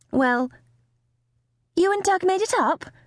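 very high, hopeful, rising tone. A mother asks her daughter Amy about Doug, sounding hopeful. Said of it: "Her mother sounded so hopeful".

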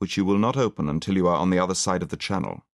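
plain reading voice

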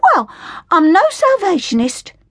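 blurted-out, high, indignant outburst. Hilda answers Flora's remark about the Sally Army, bursting out. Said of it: "Hilda burst out".

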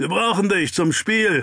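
calling out loudly, high pitch. Someone in the crowd calls Doc over to the game, called out. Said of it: "rief da jemand".

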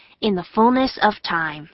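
ordinary delivery

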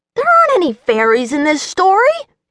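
irritated, cross, very high-pitched, swooping. A dragon interrupts a girl wishing for a fairy godmother; cross. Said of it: "the dragon interrupted crossly".

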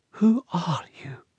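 soft, high, barely above a whisper. A woman asks a stranger kneeling before her who he is; whisper. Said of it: "Her voice came out in a whisper".

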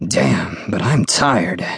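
voice dropping. George speaks, his voice dropping. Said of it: "George's voice dropped".

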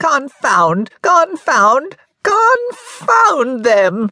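very high, reedy yell like a goat bleat. Narrator reading a dwarf's outburst alone in his shack: reedy goat's-voice yell. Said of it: "he would yell in his reedy goat's voice".

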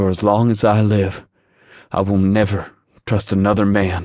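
through clenched teeth. Narrating a woman's line in a story, spoken through clenched teeth. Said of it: "she said between clenched teeth".

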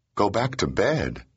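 disbelieving, incredulous, drawn-out delivery. She repeats his suggestion back to him, incredulous. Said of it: "She asked incredulously".

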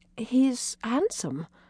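quiet murmured voice. Anne, looking at a miniature portrait of a young man: murmured. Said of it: "Anne murmured".

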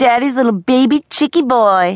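high, shrill, scornful, scathing jeering voice. She stares scornfully at the boy and mocks him, scathing jeer. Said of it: "she jeered in a scathing voice".

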